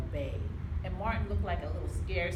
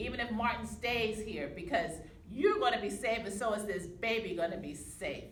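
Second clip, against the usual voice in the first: plain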